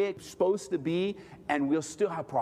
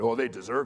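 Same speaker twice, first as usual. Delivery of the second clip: low, scornful, sarcastic dismissive tone; 10 semitones lower than usual. Describing how people in the flesh react to bad news, mock-sarcastic dismissal. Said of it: "you're sarcastic about it".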